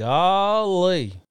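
"golly" stretched out long and high. Repeating a quiz soundbite for the guesser: Gomer Pyle voice. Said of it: "you got it more from me than you did from the soundbite".

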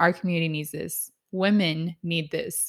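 ordinary delivery

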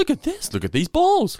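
put-on silly, very high, gushing kids' show host voice. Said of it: "a guy standing there going".

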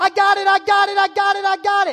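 very high, very loud screaming yelling call. Retelling running toward a fly ball: retelling own screaming. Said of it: "I start screaming like the coach taught me".

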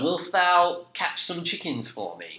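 put-on very high, archaic-sounding northern English accent. Describing how a film's characters talk, in a northern england accent. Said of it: "very like Northern England accent".

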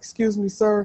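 soft, high, hushed, whispery little voice. Retelling a girl who approached him asking, imitating her soft whisper. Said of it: "trying to like whisper to like to me in like a soft voice".

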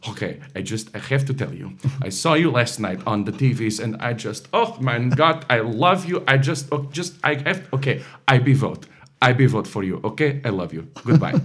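put-on very thick, heavy, laid-on Eastern European accent. Quoting a woman who ran up to them, in a thick eastern european accent. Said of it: "in this very thick Eastern European accent".

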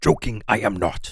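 backwards-talking little sage voice with inverted word order. Told to stop joking around, one speaker replies in a Yoda voice. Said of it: "Stop with the Yoda voice".

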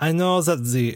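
put-on drifting into a French accent. Actor in a scene whose lines keep slipping into a French accent. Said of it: "I keep going French".

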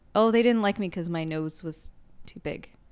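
ordinary delivery

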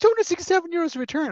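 high-pitched, incredulous, outraged disbelief.

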